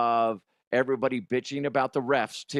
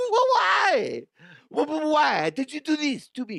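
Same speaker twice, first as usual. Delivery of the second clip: very high, swooping, stammering fake French accent. Imitating a man's reaction, in a fake french accent. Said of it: "I'm making him sound French".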